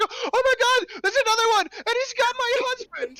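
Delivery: very high, loud, terrified shriek. Playing a woman who sees another one has got her husband: shrieking in fear. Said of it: "shrieks in fear".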